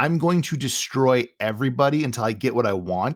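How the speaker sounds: ordinary talk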